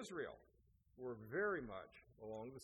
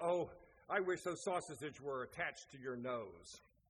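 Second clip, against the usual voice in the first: fed-up, exasperated blurted outburst. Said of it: "he was just so exasperated".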